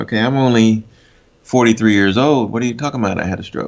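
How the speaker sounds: normal talking voice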